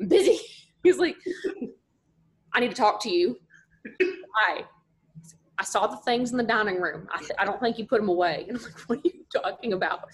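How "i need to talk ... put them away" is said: put-on super thick, heavy North Mississippi country accent. Retelling how he interrupted you when you were busy, imitating Steve's super thick Mississippi accent. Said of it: "he's from North Mississippi and has a super thick accent".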